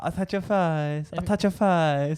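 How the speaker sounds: put-on man speaking in high-pitched baby talk. Imitating a man on a tram talking to his kid: imitating a man's baby talk. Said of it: "that wasn't his voice".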